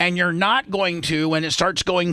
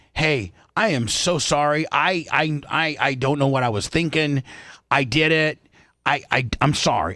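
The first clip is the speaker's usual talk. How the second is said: mock slow, halting, profuse pleading over-apology; 3 semitones lower than usual. Acting out what another speaker would say when caught: mock pleading apology. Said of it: "Seth, are like".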